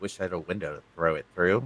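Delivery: very low, hushed, quiet muttering under the breath. Voicing a character muttering a remark under her breath. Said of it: "the Miz under her breath goes".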